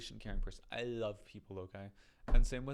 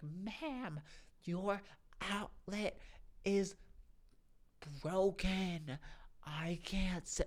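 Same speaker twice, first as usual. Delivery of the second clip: mock very slow, patronizing yell, pitched up; 8 semitones higher than usual. Imitating a condescending worker talking to a deaf person: imitating someone screaming.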